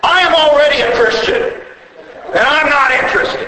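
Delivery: mock hostile snarl. Retelling what a woman said before slamming the door: mimicking a snarl. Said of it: "She snarled at me".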